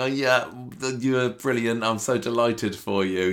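hollow, grudging, forced, fake delight, acted. Retelling a character congratulating a rival: imitating forced, fake delight. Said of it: "He absolutely despises the fact".

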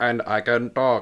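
loud, very slow text-to-speech robot voice. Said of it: "So he's like a robot voice".

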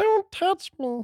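bad, very high, squeaky, half-failing puppet voice. Quiz host quoting Elmo after a news round, in a bad Elmo voice. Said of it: "I can't even do my Elmo right now".

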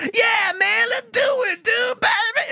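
hoarse, high, slow, drawn-out dude voice. Going down a list of voices, imitating one actor's performance: hoarse Berserko voice. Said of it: "such like this hoarse voice".

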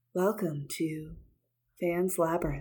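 public-radio announcer voice, host style. Mocking the co-host's podcast opening, doing an NPR voice. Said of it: "you've got the like NPR voice".

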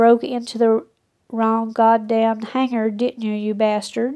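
ordinary delivery

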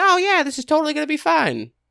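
squeaked up high, swooping. Imagining what Kermit said about the deal: horrible Kermit impression. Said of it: "Horrible Kermit impression".

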